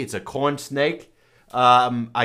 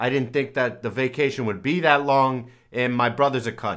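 ordinary talk

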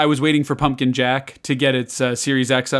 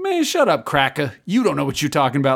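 put-on voice with attitude. Retelling a game inmate snapping at another: imitating inmate with an attitude.

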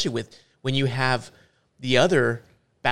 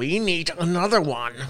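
put-on evil voice at a higher pitch; 5 semitones higher than usual. Playing Jim Ryan at Sony while talking with a co-speaker, evil Jim Ryan voice. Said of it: "That was my evil voice".

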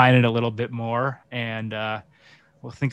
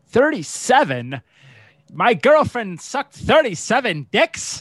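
put-on cartoon meerkat voice, higher; 12 semitones higher, 3 dB louder than usual. Doing a movie quote for a guessing game: Timon voice. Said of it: "the character I was trying to do was Timon".

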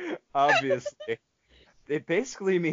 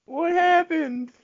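put-on high, slow old lady voice. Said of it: "It's a good old lady impression".

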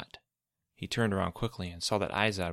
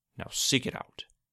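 demanding, much higher pitch; 5 semitones higher than usual. Narrating one character ordering another, demanding. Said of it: "Izod demanded".

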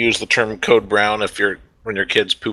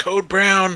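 put-on yell, very high, called out; 10 semitones higher than usual. Retelling how the wife called from upstairs: imitating wife yelling. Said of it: "she'd just yell down".

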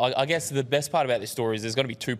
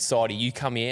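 ordinary talk, nothing marked

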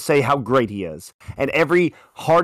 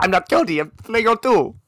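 put-on bad Spanish accent, higher; 8 semitones higher than usual. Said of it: "he has a horrible Spanish accent".

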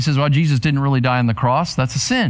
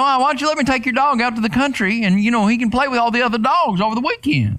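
put-on pitched-up Arkansas country-boy drawl; 9 semitones higher than usual. Speaker retelling what a country boy from Arkansas said about his dog, imitating a country boy. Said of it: "He talked like that".

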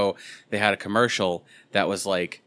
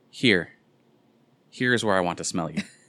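imitated sensual, seductive tone. Retelling a commercial woman's line: imitating a sensual voice. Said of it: "trying to do it all sensual-like".

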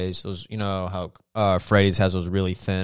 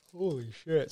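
very quiet, soft, pitched-up speech mid-yawn; 8 semitones higher, 11 dB quieter than usual. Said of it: "Sorry, folks, I'm yawning".

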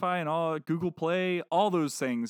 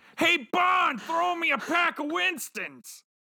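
raspy, cartoonish, high-pitched; 11 semitones higher than usual. Recalling old Winston cigarette commercials, doing a Fred Flintstone voice. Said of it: "That's my Fred Flintstone".

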